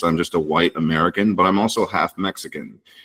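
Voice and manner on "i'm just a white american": ordinary talk, nothing marked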